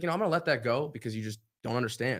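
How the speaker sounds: usual speaking voice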